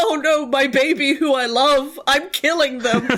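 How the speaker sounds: slow, pained, despairing, anguished cry of distress. Retelling own reaction to writing a death scene: imitating own anguish. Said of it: "And it's real bad".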